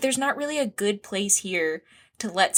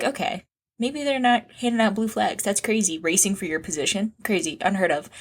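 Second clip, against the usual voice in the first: usual speaking voice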